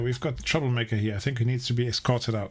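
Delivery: normal talking voice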